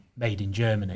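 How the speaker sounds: ordinary talk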